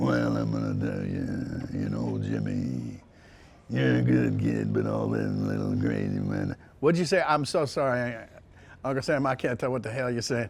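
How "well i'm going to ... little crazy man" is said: very low, deep, rough dragon growl. Recalling his uncle talking to him, imitating Uncle Sam. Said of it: "he actually sounded like".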